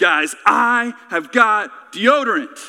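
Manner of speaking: loud put-on voice, as manly as possible. Retelling what he announced to the guys, imitating his manliest voice. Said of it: "in the manliest voice he knew how".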